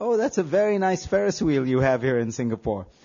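somewhat condescending, mildly patronizing tone. Retelling what they said to a man showing them a Ferris wheel, put-on patronizing tone. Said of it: "in a somewhat patronizing voice".

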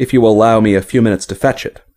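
ordinary delivery

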